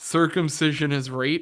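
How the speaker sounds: ordinary talk, nothing marked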